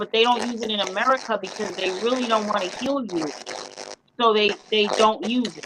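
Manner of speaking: normal talking voice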